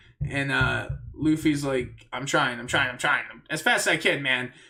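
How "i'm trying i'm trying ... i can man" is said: ordinary delivery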